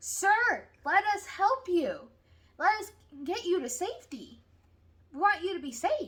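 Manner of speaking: loud, high, urgent screaming across a distance. Retelling a story where rescuers call down from a helicopter: imitating someone screaming. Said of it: "they're screaming at him from the helicopter".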